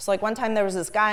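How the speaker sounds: ordinary delivery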